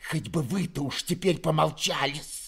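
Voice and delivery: venomous, spiteful hissing. Narrator reads a character's retort in a tense family scene, hissing spitefully. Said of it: "прошипела Перепелицына, злобно".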